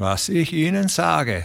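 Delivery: slow, grim delivery. Narrator reading a dismissed railway worker's reply, grim. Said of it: "erwiderte Dijk grimmig".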